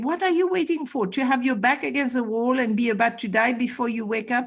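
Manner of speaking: ordinary talk, nothing marked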